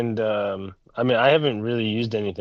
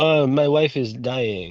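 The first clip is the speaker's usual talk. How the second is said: very slow, nonchalant, blasé French drawl; 3 semitones higher than usual. Imitating the French character from the game: imitating a nonchalant Frenchman. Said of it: "he's just being French about it".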